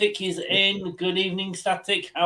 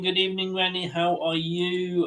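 ordinary talk, nothing marked

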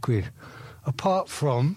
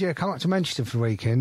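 plain

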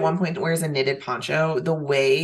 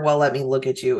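ordinary talk

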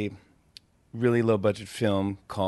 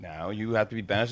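usual speaking voice

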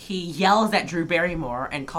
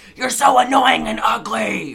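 outright loud, high-pitched yell; 6 semitones higher, 7 dB louder than usual. Retelling how he yells at his emotionally fragile sister, imitating him yelling. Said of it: "here he yells at his emotionally fragile sister".

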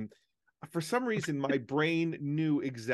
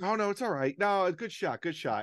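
condescending, high, patronizing there-there soothing tone; 5 semitones higher than usual. Describing consoling the other player while winning, mock-patronizing consolation. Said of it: "the patronizing that goes on to the other player".

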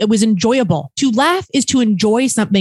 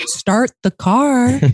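put-on, quiet, muttered delivery; 2 semitones higher than usual. Imitating another speaker quietly saying a line while paying: imitating a quiet delivery. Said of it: "did you quietly say it like that".

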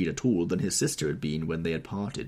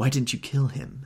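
hissed, pitched up; 6 semitones higher than usual. A woman from the bar takes his arm and confronts him: hissed. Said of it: "she hissed".

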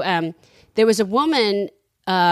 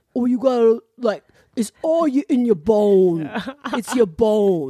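put-on strange, heavy Cajun accent, drawn-out "bone". Retelling what a woman in New Orleans told her, in a thick Cajun accent. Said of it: "They have a really strange accent in New Orleans".

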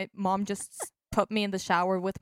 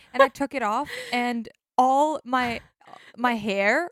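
ordinary talk, nothing marked

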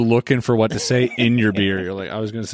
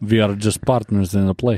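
put-on Russian accent. Quoting a woman he thinks is from Russia, imitating a Russian accent.

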